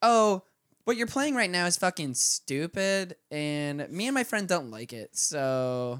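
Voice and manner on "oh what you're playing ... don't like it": put-on over-the-top, sing-song Valley Girl accent laid on thick. Speaker retells a woman's complaint to them, in an exaggerated Valley Girl accent. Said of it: "a little too much of a Valley Girl accent".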